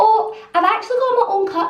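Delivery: very high, wee, ethereal fairy voice. Speaker retells ordering at a Costa drive-thru, in a wee ethereal fairy voice. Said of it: "That is my Costa drive-thru voice".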